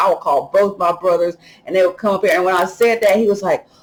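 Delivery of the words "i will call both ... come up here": ordinary talk, nothing marked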